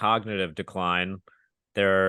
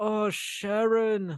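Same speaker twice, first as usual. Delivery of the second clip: put-on very high-pitched mummy voice with British accent; 14 semitones higher than usual. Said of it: "that's a little better".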